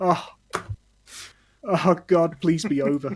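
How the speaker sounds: crying happy tears. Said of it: "just weep tears of joy".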